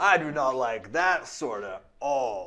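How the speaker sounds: weird, offbeat surfer-dude voice. Imagining how a character sounds: Kaladin as a weird surfer. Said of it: "like a weird surfer".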